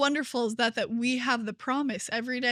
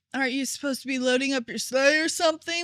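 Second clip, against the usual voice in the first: put-on fast, snarky, sassy teenager voice; 2 semitones higher than usual. Retelling a movie scene, a teenager taunts a woman dressed as santa: sassy teenager voice. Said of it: "trying to be like a sassy teenager".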